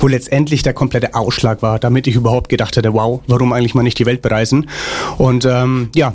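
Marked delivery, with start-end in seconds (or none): none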